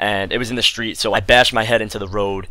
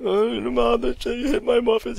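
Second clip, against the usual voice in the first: sloppy crying speech, acted; 14 semitones higher than usual. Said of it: "much more sloppy".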